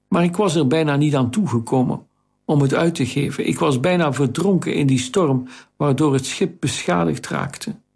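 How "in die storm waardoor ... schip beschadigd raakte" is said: plain reading voice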